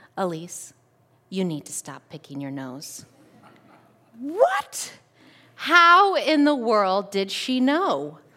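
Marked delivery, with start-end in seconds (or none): 0.2-3.1 soft, hushed half-whisper. Retelling what a teacher said at the desk: imitating a half-whisper. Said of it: "whispers to me".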